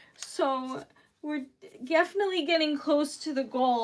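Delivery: ordinary talk, nothing marked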